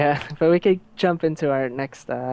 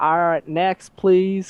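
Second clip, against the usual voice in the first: put-on slow, high southern drawl; 5 semitones higher than usual. Acting out the woman at the counter calling the next person: southern accent. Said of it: "She has a southern accent because it just fits the story".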